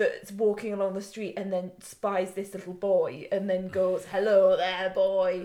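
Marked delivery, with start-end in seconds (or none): 4.0-5.4 put-on drunk old man voice, louder. Retelling how a really drunk man greets a boy: imitating drunk Lampy. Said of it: "an old man that's really inebriated".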